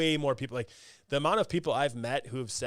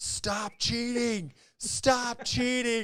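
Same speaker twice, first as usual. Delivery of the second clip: put-on shrill, very high, top-of-the-lungs shriek; 11 semitones higher than usual. At a game event, retelling screaming at an opponent whenever a judge came near: retelling screaming. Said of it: "I just started screaming at him".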